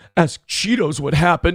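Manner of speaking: quavering, trembling, sad, upset voice. Retelling what a man who was almost crying said: imitating a trembling voice. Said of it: "his voice was trembling".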